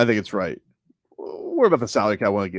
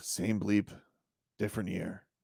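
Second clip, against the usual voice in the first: hushed, very soft, disgusted, acted-out grumble; 15 dB quieter than usual. Retelling a quarterback's press conference answer, imitating Josh Allen's disgusted tone. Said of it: "How disgusted he was with himself".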